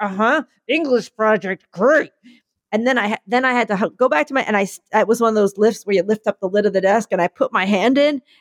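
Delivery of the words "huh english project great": words pushed out past a clenched jaw. Retelling hiding a stapled finger in class: imitating talking through gritted teeth. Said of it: "sitting there gritting my teeth like".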